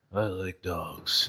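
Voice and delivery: very hushed, deep, dull, bored drone. Explaining a dice-roll game, showing how a roll of one sounds, quiet and boring. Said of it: "if we get a one, it'll be".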